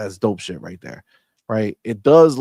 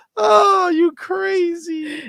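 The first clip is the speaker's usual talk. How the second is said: put-on dismissive brush-off, very high-pitched. Retelling how Phil brushed off a question: fake dismissive brush-off. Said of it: "did a fake ass".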